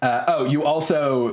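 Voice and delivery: ordinary talk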